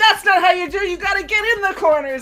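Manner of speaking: put-on loud, high, tough, scolding gangster yell. Describing a show's episode, retelling the husband's yell at a Roomba. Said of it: "he's yelling at a Roomba saying".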